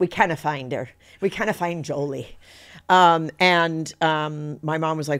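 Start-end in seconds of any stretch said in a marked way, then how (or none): 0.0-2.4 bad, clumsy put-on Scottish accent. Retelling staff telling a mother her baby is missing: bad Scottish accent from The Nanny. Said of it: "that was my bad Scottish accent from The Nanny".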